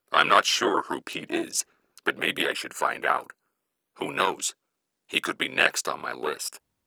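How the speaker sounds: flat, creaky, level demonic monotone. An unseen caller finally answers someone threatening to hang up, in a devilish monotone voice. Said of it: "The devilish voice finally answered, maintaining the same monotone as before".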